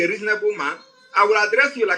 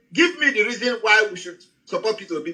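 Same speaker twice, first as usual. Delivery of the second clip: usual speaking voice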